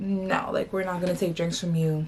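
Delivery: ordinary delivery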